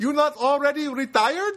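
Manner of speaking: poor put-on Filipino accent. Retelling what a woman asked him on his day off, bad Filipino accent. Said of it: "I don't do a great Filipino accent, but I will do a simulation of one".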